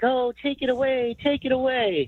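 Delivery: very high, slow, drawn-out crybaby whine. Imitating rival fans complaining about the penalty: imitating whiny crying fans. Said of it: "all these other fans crying, like".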